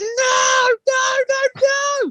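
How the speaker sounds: mock, very high, screaming and wailing child's protest. Retelling a child who tried to run off in a busy place: imitating a child screaming. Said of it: "she's like screaming".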